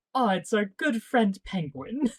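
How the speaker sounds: put-on pleasant, unconcerned, casual tone. Recounting Gordon getting a call from the Penguin, imitating Gordon's pleasant tone. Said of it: "he sounds so pleasant as he says it".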